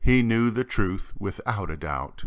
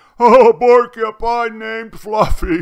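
shrieking, howling laugh, very high and loud; 12 semitones higher, 12 dB louder than usual. A rhinoceros, rolling on the ground laughing, addresses a porcupine; howling with laughter. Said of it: "Howled the rhinoceros".

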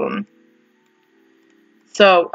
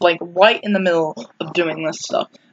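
plain

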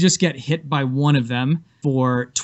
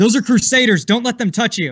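high, urgent, alarmed screaming; 8 semitones higher than usual. Voicing Zelda warning the others as a melee erupts: screaming out a warning. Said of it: "screams out".

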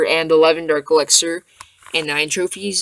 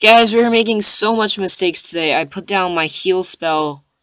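ordinary delivery

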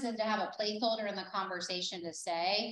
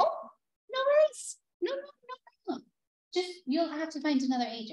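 put-on British, Australian, German accents, much higher pitch; 9 semitones higher, 4 dB louder than usual. Retelling what she said about a loyalty agreement, put-on british, australian, german accents. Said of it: "That was my British, Australian, and German".

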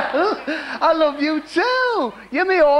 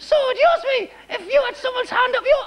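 high-pitched ventriloquist dummy puppet voice; 8 semitones higher than usual. In a puppet act, the puppet speaks after its voice is remarked on: high puppet voice. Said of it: "his voice is a lot higher than usual".

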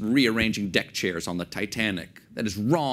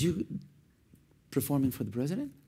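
put-on Algerian-accented speech; 6 semitones higher, 6 dB quieter than usual. Retelling how the woman at her coffee shop questioned you, in a put-on Algerian accent. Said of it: "And this is my Algerian accent".

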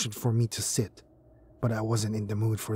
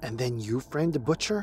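plain

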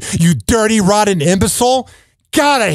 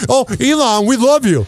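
put-on gushing radio host voice, higher; 3 semitones higher than usual. Imitating show hosts welcoming a guest: imitating radio hosts gushing. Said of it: "Everybody would be wanting to have him on their show".

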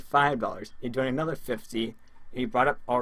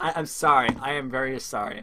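laughing through the words, much louder; 3 dB louder than usual. Addressing another player on stream: apologizing while laughing. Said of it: "I'm still laughing till this day".

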